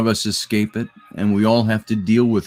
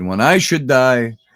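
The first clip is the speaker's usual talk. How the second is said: put-on Yiddish accent, higher and louder; 4 semitones higher, 5 dB louder than usual. Retelling an aunt's remark at a movie: imitating a Yiddish-sounding accent.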